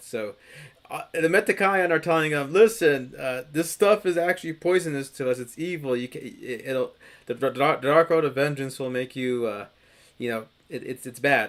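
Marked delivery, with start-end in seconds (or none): none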